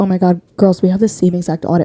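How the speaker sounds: ordinary delivery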